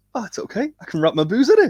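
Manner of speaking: very high, squeaky, cheery mock impression. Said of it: "I love the way Colin just goes".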